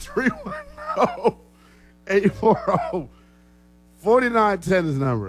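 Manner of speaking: high-pitched, laughing through the words.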